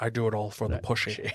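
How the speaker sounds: very low, quiet, soft, suave film secret-agent voice. Showing what someone's impression sounds like after other impressions, do a James Bond impression. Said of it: "Then his James Bond is".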